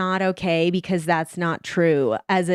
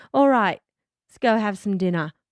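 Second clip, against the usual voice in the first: put-on Australian accent. Retelling what Steven said after kissing the speaker's cheek: imitating Steven's Australian accent. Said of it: "that was Australian".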